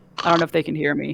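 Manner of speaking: plain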